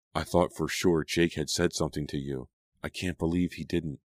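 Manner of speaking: ordinary delivery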